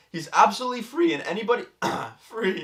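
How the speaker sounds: voice cracking and breaking up high. Describing a man's carefree life on a live podcast, voice cracking. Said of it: "So when you have like a voice crack".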